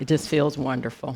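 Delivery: holding back tears, trying not to cry. Answering how it feels to be debt-free, holding back tears. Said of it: "I'm trying not to cry".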